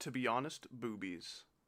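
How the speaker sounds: normal talking voice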